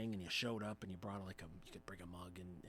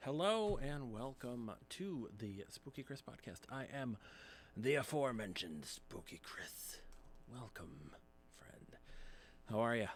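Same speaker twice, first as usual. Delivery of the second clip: on-air radio announcer style delivery; 4 semitones higher than usual. Podcast host opening the show and greeting the listener, in a radio voice. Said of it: "It's my radio voice".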